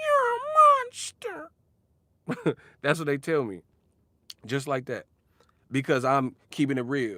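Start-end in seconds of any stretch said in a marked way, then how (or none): 0.0-2.6 squeaky, very high, loud, swooping sing-song voice. Speaker acts out what people tell him, in a Gingerbread Man from Shrek voice. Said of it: "sounding like the gingerbread man from Shrek".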